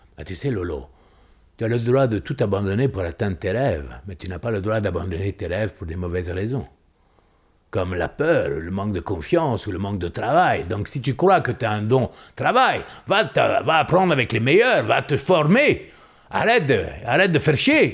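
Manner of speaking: put-on Italian accent, fatherly tone. Retelling a father's advice by the barbecue: imitating father's Italian accent. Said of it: "il avait un accent italien, mon père".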